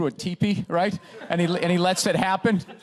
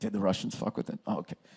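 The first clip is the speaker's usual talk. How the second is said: soft, hushed, under-the-breath whisper; 10 semitones lower, 9 dB quieter than usual. Mocking how a dull hearing slips in the key question: imitating a whisper. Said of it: "they sort of whisper it".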